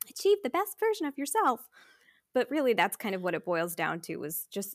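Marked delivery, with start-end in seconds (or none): 0.1-1.6 bright, high, loud, peppy saleswoman voice. Noticing they sound like an MLM lady, the speaker repeats it in an MLM lady voice. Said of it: "I sound like an MLM lady".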